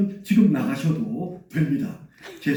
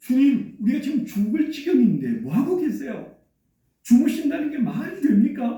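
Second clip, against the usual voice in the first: mock indignant, emotional, protesting tone; 6 semitones higher than usual. Speaker voicing the disciples' complaint to Jesus, retelling a protest with feeling. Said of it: "좀 감정을 넣어서 ... 항의하듯 말하고 있는".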